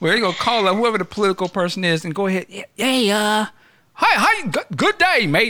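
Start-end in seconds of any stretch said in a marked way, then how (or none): 2.8-5.5 put-on Australian accent, pitched up, very drawn out. Imagining phoning whoever the political person is, Australian accent. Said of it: "Now I'm all on my Australian".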